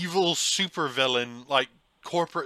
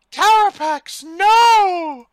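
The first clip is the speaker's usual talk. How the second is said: mock weak feeble cry, higher and louder; 13 dB louder than usual. Imitating a movie villain being dragged off, mock weak protest. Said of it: "she's like".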